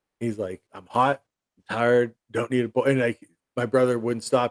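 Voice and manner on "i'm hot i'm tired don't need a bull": angry, explosive flip-out. Retelling a father's outburst at a pestering brother: imitating an angry outburst. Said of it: "My dad flipped out".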